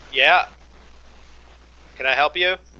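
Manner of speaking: slightly irritated, mildly annoyed tone. A narrator voices a smith turning to a customer who lingered, a little annoyed. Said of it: "turns around a little bit annoyed".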